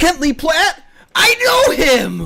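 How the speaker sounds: big, animated, very high, swooping, loud yell. Streamer answering a viewer's request for a Buddy the Elf voice: Buddy the Elf imitated yell. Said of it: "I just yelled".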